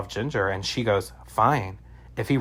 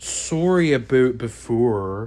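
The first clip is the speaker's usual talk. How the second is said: put-on egregious Canadian accent laid on hard. Recapping a scene where a woman apologizes to a man in his greenhouse: egregious canadian accent. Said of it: "in the most egregious Canadian accent I've ever heard".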